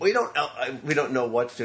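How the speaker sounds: plain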